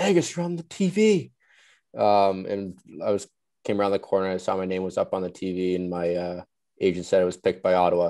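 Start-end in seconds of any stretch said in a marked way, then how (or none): 0.0-1.3 mock, high, stretched-out, drawn-out shriek. Retelling a brother's reaction on draft day: imitating someone screaming. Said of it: "my brother screams".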